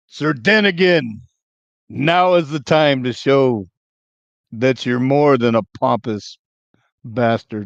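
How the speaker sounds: full-throated yelling at the top of the lungs. Calling out in character before attacking: yelling at the top of voice. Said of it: "I'm gonna yell at the top of my voice".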